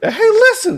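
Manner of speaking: very high, loud, annoying little fairy voice. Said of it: "that annoying ass voice from Zelda".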